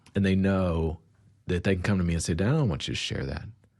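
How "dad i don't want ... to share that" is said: plain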